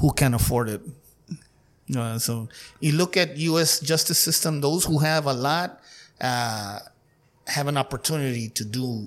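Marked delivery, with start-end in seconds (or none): 0.0-0.8 muttered and faster. Retelling what a friend adds after the flag salute, imitating Denny muttering under breath. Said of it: "you can hear him under his breath".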